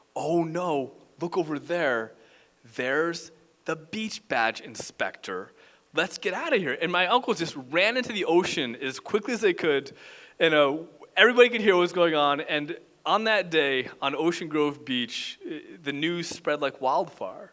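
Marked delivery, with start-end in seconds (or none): none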